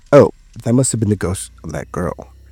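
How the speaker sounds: ordinary delivery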